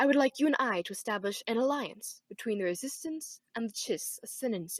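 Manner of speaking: breathy English accent, slowly. Voice actor demonstrating character voices, doing Thrawn in a breathy English accent. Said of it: "add some breathiness, add an English accent, then say things more slowly".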